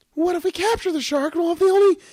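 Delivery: squeaked out, pitched way up high. Asked to do the biologist's voice, the speaker retells her line in a Minnie Mouse voice. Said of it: "It's me, Minnie Mouse".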